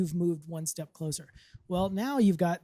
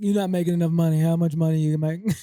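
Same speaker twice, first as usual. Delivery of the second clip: loud, booming star athlete voice; 7 dB louder than usual. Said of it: "I don't know why I gave him [name]'s voice".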